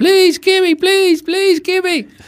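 shrieking, very high, shrill scream. Recounting a woman pleading with a man who wouldn't stop; imitating her screaming. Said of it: "she was screaming".

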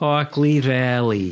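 sudden put-on New York accent. Answering a question about what he is drinking, in a sudden New York accent. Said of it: "When am I talking with a New York accent suddenly?".

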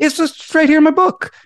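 bright, lively, energetic, very high pitch. Showing how a joke line would land better: lively vocal energy. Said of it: "vocal energy would make that joke funny. Like, saying".

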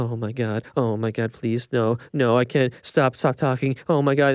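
muttered, anguished, pleading inner-voice mumble. Retelling a film character's dialogue while discussing the movie, Jean Grey mumbling impression. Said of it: "mumbling to the Phoenix power in her head".

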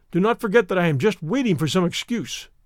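ordinary delivery

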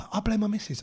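frightened, hushed whisper. Talking with a mate about stuff left in the car: scared whisper. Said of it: "I don't know why I'm whispering".

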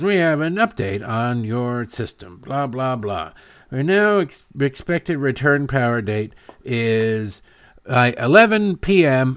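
recorded-sounding, small automated robot announcement voice. Retelling an automated power outage update call, in a little robot voice. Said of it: "the little robot voice says".

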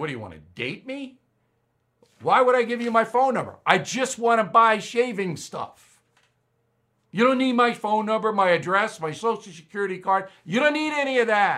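mock playful teasing, light and joking. Speaker retells answering a woman who asked for their phone number, retelling a joking reply. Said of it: "I'm trying to make it a joke".

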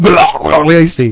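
high creature voice on one word. Pronouncing the name Galassi like Gollum saying his own name: Gollum voice on Galassi. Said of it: "I'm going to pronounce it like Gollum saying his own name".

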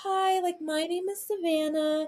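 very high telephone voice, an octave up. Imitating friends introducing themselves on the phone, high phone voice. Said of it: "it goes like an octave higher".

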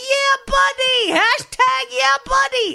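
put-on very high, loud, drawn-out Bronx accent. Retelling a reality show contestant, a bartender from the Bronx: imitating a Bronx accent. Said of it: "this is what he sounded like".

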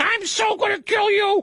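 put-on silly high-pitched girly voice. Demonstrating the silly voice of a killer who never talks: silly high-pitched girly voice. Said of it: "a really silly, high-pitched, girly voice".

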